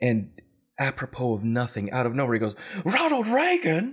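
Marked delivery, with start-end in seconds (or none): 2.8-3.9 put-on wild-eyed actor voice, higher and louder. Retelling a joke from a TV show: Christopher Lloyd impression. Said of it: "does this dead-on Christopher Lloyd impression".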